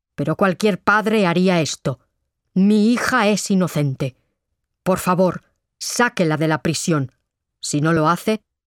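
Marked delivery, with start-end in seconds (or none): none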